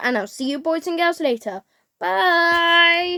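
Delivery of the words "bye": high, drawn-out "bye" with voice cracking. Signing off to your viewers at the end, with your voice cracking. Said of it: "I literally had a voice crack on that".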